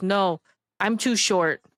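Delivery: slow, earnest, dead-serious, matter-of-fact delivery. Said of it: "very serious".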